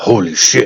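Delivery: whispered under breath. Reacting in character as fire narrowly misses: whispered under breath. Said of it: "I whisper".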